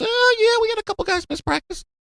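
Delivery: very high, derisive, taunting falsetto. Replaying the line for listeners who enjoy teasing: high-pitched Dan Mullen impression. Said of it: "me in the high-pitched voice mocking Dan Mullen".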